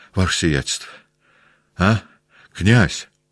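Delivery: trembling, shaky, quavering voice. A man runs up to the stretcher carrying the prince, in a trembling voice. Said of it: "Дрожащим голосом сказал".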